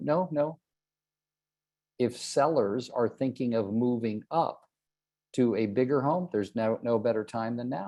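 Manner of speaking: normal talking voice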